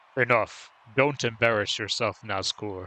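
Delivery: deep, low, menacing final-boss villain voice. Voicing the last guy's game lines after defeating an enemy: deep voice for the last guy. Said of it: "a deep voice for the last guy".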